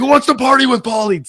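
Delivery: wild, high, stage-comic party scream. Retelling a TV episode scene, imitating Pauly Shore screaming. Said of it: "just screaming like he normally does on stage".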